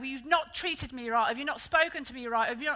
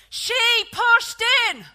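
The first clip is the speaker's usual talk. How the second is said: put-on shrill, very loud, very high little boy's voice; 9 semitones higher, 8 dB louder than usual. Telling a story, quoting the little lad to his sister in a very loud voice. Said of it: "in a very loud voice says".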